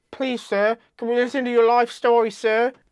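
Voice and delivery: bad put-on English accent. Voicing what he would have said, in an atrocious English accent. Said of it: "That's an atrocious English accent".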